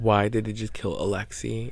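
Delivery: plain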